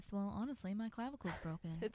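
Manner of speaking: put-on muttered aside. Quoting a funny line from the show: imitating Leslie Knope under her breath. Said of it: "says under her breath".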